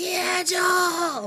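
very high, loud holler stretched long. Recounting yelling at a graduation as the clapping ends, retelling a loud yell. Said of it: "waited till the clapping was almost done and yelled".

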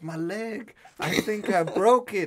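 very slow, high, loud, howling, very drawn-out scream. Retelling a friend's injury, imitating someone screaming. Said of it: "He starts screaming".

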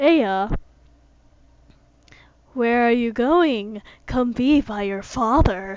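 creepy, unsettling, sinister voice. A father calls his child back as she runs off, creepy voice. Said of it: "his voice is creepy".

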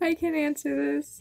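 ashamed voice. Taking on a question about being obsessed with boys, shameful voice. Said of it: "She says in a shameful voice".

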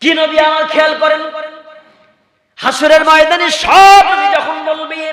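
high, loud preaching.

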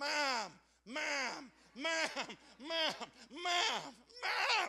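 very slow, loud, drawn-out, rising repeated yell. Describing a child calling from upstairs: imitating Ruth yelling. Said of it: "she'd be just like yelling".

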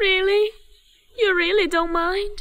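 tearful voice. A wife asks her husband if he truly doesn't mind, crying. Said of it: "Don't cry".

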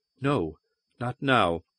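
barely audible. A woman pulls free from a man and answers him, barely audible. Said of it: "so quietly he could scarce hear".

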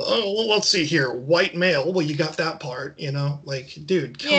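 usual speaking voice

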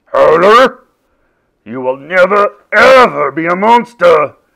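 very loud, thundering, booming delivery. At monster school, a teacher addresses a pupil sent to his office, booming. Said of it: "boomed Mr. Ogre".

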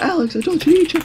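put-on scream at top of lungs. Acting out a mom who calls from the doorway: imitating a mom screaming. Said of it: "screaming at the top of her lungs".

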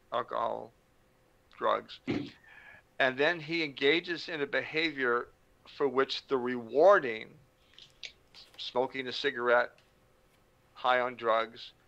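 very slow, drawn-out, deliberate, word-by-word delivery. Defining addiction when asked what it is, speaking really slowly. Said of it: "I'll say it really slowly".

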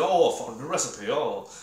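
put-on British accent. Complaining about a game's characters, mocking Ignis's weird British accent. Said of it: "Ignis has this weird British accent".

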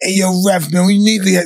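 loud, high-pitched screaming. Retelling yelling at a tennis ref from the stands: retelling screaming at the ref. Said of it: "I'm calling, screaming".

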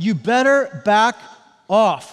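put-on tough, loud, slow New Jersey accent. Imagining how a woman would say this, in a New Jersey accent. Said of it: "I envision her saying this with a New Jersey accent".

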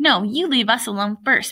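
plain reading voice

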